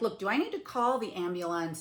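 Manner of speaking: ordinary delivery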